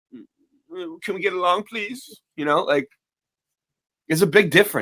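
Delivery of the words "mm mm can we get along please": timid, high, soft, frightened voice. Imitating how Rodney King now sounds in the clip: imitating Rodney King sounding scared. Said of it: "Now he's like".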